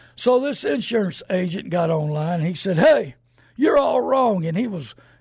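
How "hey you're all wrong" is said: high, loud hollering voice. Retelling an angry radio caller who disagreed: imitating someone hollering and screaming. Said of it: "he was hollering and screaming".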